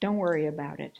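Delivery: play-acted, choked-up catch on the final word. Retelling a reply to a girl on a train: retelling with voice catching. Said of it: "My voice catches on the last word".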